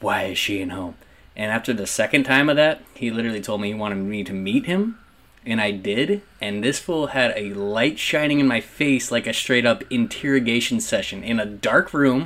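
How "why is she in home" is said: scary, threatening, menacing voice. Retelling a guy's phone call when she got home late, retelling a scary voice. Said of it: "Scary ass voice".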